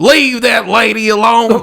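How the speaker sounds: fake Texas and Southern accent. Quoting a bystander who steps in to defend a woman, in a Texan-Southern accent. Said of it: "What accent was that?".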